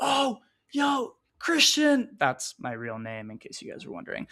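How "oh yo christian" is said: imitated scream, higher. Retelling how mom screamed up the stairs: imitating mom screaming. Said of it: "she just starts screaming".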